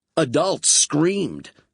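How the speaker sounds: ordinary delivery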